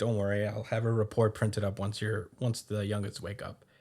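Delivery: normal talking voice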